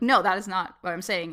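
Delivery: ordinary delivery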